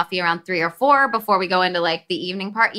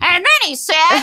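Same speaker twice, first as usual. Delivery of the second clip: put-on weird voice, higher and louder; 11 semitones higher, 5 dB louder than usual. Retelling an own failed try at acting sexy: imitating own weird voice. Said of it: "with, like, a weird voice".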